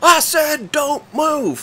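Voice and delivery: high-pitched, slowly dragged-out shouting yell. Retelling a man with a shotgun ordering them not to move: imitating a man yelling. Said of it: "but yelling at us".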